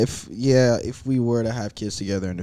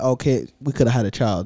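usual speaking voice

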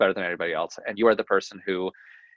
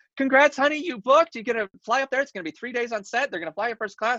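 mock-excited put-on voice, much higher pitch. Speaker retelling the agent's call about a first TV credit, imitating an excited agent. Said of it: "she's so excited".

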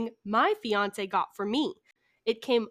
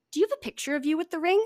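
put-on, very refreshed-sounding tone; 7 semitones higher than usual. Retelling asking a woman for a picture with the ring: retelling in a refreshing tone. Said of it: "In my most refreshing tone".

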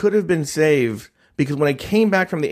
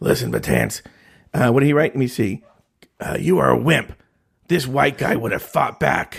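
acted throaty, mucousy voice; 2 semitones lower than usual. Reading out what someone wrote, in a Boo Hacker impression. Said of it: "my Boo Hacker impression".

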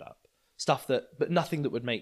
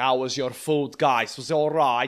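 put-on silly, slower, drunk Italian waiter character voice; 3 semitones higher, 8 dB louder than usual. Describing a character he performs: drunk Italian waiter character. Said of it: "Italian waiter character where he's just like kind of drunk maitre d'".

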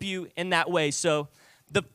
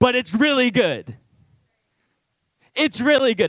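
overtly sarcastic, put-on tone; 4 semitones higher, 3 dB louder than usual. Joking that the gospel is not a TV finale: put-on sarcastic tone. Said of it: "note the sarcasm in that voice".

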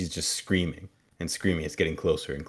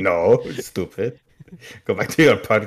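put-on accent from Transylvania; 3 semitones higher, 6 dB louder than usual. Retelling a story, the speaker quotes a man in a Transylvanian accent. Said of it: "that's a very good Transylvanian accent".

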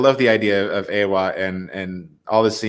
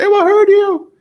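shrieking cry, very high and very loud; 9 dB louder than usual. Retelling a movie scene where Neytiri screams: imitating Neytiri screaming. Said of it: "and she screams".

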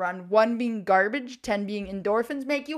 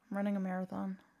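sad and much quieter; 11 dB quieter than usual. Answering what you signed up for in 2024, sounding sad. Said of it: "You sound so sad about it".

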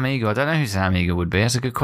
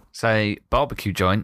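usual speaking voice

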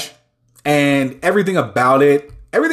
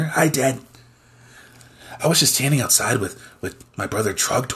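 put-on pet dog voice; 3 semitones lower, 6 dB quieter than usual. Speaking as the pet dog, greeting Dad: voicing the dog Milo. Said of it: "your weekly appearance from, uh, Mister Milo".

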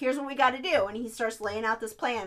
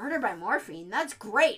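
totally unbothered, super chill, offhand delivery. Retelling a man's reaction while a woman digs for the antidote, imitating a super chill tone. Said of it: "he is just so chill about it".

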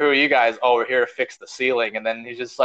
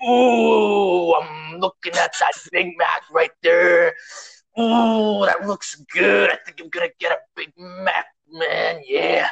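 slow, pitched-up drawling voice, stretched ooh sounds; 6 semitones higher than usual. Imagining ordering food at McDonald's: Macho Man voice. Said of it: "And then Macho Man's like".

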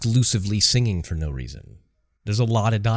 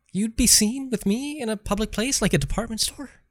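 very high, small, geeky nerdy voice; 12 semitones higher than usual. Playing a character in an improvised scene, in a nerdy little voice. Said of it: "I just chose like a nerdy little voice".

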